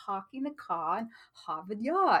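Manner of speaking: bad British accent with every R dropped. Demonstrating how received pronunciation drops the R's, in a bad British accent. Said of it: "I could do my bad British accent".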